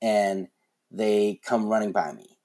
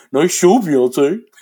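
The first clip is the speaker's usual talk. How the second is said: put-on squeaky, high, loud fifteen-year-old blurting voice; 7 semitones higher, 11 dB louder than usual. Speaker retells what their mouth blurted out, in a 15-year-old's voice. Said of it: "Mouth goes like in a 15-year-old's voice".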